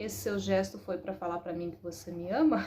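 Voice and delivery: ordinary talk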